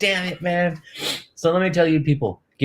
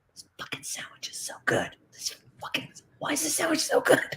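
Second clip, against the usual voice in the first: hushed, breathy, very quiet whisper under the breath; 12 semitones higher, 9 dB quieter than usual. Retelling the office manager holding the sandwich: imitating a whisper. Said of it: "whispering to me".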